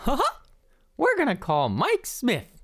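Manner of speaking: classic cartoon mouse character voice. Phoning to cheer up someone who hurt his back, in a Mickey Mouse impression. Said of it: "[name] is going to do his best Mickey impression".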